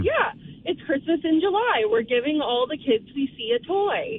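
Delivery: ordinary talk, nothing marked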